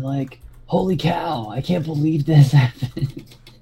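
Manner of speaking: talking like a surfer. Describing a character, imitating how he talks, in [name]'s surfer dude voice. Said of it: "he talks like a surfer dude".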